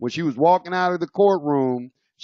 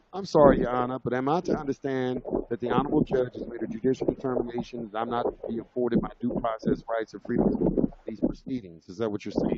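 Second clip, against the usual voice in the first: very calm, composed, hushed whisper; 7 dB quieter than usual. Speaker retells what they said to the judge after her rant, retelling own calm reply. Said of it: "I said it very, very calmly".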